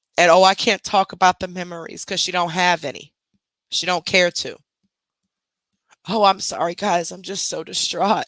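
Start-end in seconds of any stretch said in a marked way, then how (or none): 6.1-8.3 put-on, fake, distraught whining. Speaker mocking someone who cries on the internet, mock-distraught whining. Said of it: "No, that's all an act".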